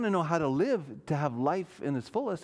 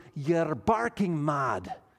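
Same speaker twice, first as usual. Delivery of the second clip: bad, terrible, fake Scottish accent. Quoting a man's remark about a thirty-minute sermon: terrible Scottish accent. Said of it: "That was a terrible Scottish accent".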